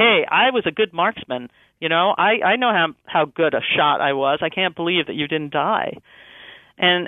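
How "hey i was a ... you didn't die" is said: ordinary delivery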